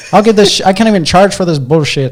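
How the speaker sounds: very high, loud, shrill put-on old Irish man accent. Retelling what an old irish man said: put-on irish accent. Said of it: "was that even a proper Irish accent?".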